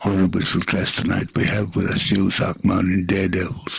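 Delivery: quiet soft-spoken DJ voice. Imitating a DJ introducing a band: Whispering Bob quiet radio voice. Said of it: "talking to you quietly like this".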